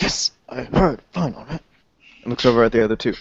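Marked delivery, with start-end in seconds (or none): 0.0-1.6 quiet shout, irritated. Voicing a character who answers a voice over his shoulder: quiet shout. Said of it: "quietly shouting".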